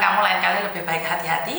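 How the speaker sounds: ordinary talk, nothing marked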